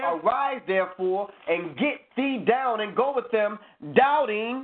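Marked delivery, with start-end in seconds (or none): none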